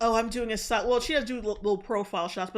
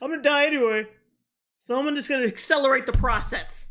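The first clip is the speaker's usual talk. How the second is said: loud, scornful, derisive parody of a dumb-people voice; 3 semitones higher, 5 dB louder than usual. Mocking what people say to excuse danger: mocking imitation of people. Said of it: "the dumbest shit people could fu-, possibly fucking say".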